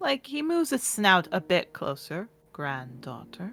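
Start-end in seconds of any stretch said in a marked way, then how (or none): 2.5-3.5 hushed giant dragon voice, lower and quieter. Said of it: "I have to whisper to not blow out your eardrums".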